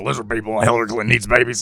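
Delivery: low, gravelly, ranting voice.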